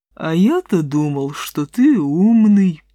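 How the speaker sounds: lazy, idle, lowing, mooing buffalo voice. Narrator reads the buffalo's reply to the threatening wolf, lazy mooing buffalo voice. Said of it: "лениво промычал буйвол".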